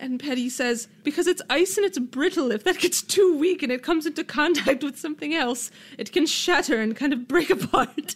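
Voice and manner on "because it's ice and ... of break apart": put-on proper, pitched-up English lady accent. Reading a researcher's quote aloud: british woman accent. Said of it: "I don't know why I sound like a British woman".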